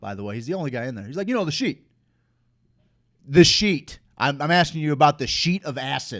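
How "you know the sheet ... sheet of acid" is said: loud, offhand, matter-of-fact, nonchalant tone. Retelling what a lone gambler asked out loud: imitating a loud, nonchalant man. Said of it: "Very nonchalant, very loud".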